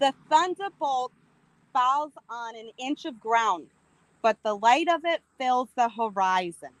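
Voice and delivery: speaking with Boston accent. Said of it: "Read it in a Boston accent".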